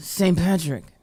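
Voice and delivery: mock gravelly detective voice. Imitating the detective from Power to another speaker: raspy voice of the detective from Power. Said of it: "She had the raspy voice".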